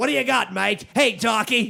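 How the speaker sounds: terrible, bad fake Australian accent. Imitating a film director's terrible Australian accent from a movie: Quentin Tarantino's terrible Australian accent. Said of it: "Quentin Tarantino's terrible Australian accent".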